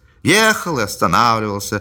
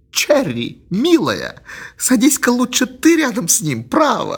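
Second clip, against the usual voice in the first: very high half-whisper, stifling laughter; 10 semitones higher than usual. Mary half-whispers to Charity while Mr. Jonas talks: half-whispering, choking with laughter. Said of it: "шептала Мэри, давясь от смеха".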